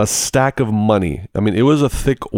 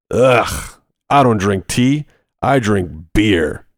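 mock-disgusted man's voice, slower. Quoting a man who asked what the speaker was drinking: imitating a disgusted man. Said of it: "That's almost the way he said it too".

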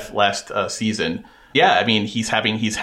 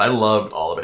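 plain

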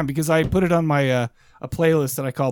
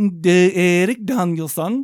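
put-on Swedish accent; 4 semitones higher than usual. Saying a name again after being asked to do it Swedish, Swedish accent. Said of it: "do it Swedish".

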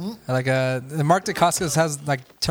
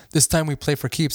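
plain

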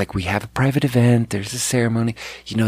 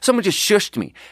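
put-on shrill, very high, irate, angry yelling; 9 semitones higher than usual. Doing his impression of a mad older lady yelling at him: retelling an angry mom yelling. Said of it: "she's yelling at me like".

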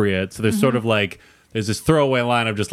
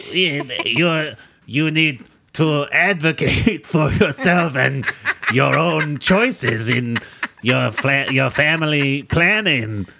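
imitated, put-on French accent; 2 semitones higher than usual. Imagining a french guy buying ice and giving advice, in a french accent. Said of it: "I lost the accent".

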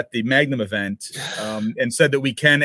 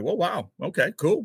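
put-on surprise, pitched much higher; 6 semitones higher, 4 dB quieter than usual. Retelling a story, the speaker acts out a man's reaction, imitating someone surprised. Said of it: "he was surprised".

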